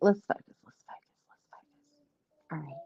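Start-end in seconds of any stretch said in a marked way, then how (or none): 0.0-1.7 whispered, quieter. Getting ready to start the talk, whispering. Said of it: "I don't know why I had to whisper that".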